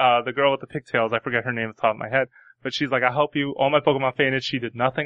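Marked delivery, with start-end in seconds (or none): none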